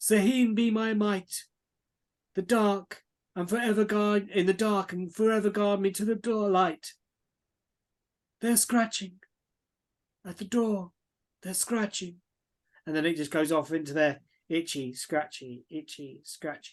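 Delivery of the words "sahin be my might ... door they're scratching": put-on elderly man's reading voice. Reading aloud a hastily scrawled note, in an old man voice. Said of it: "do an old man accent like that".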